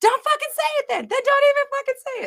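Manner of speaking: very high, worked-up, fired-up yelling. Retelling yelling at the TV while listening: imitating own yelling. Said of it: "yelling at the T V".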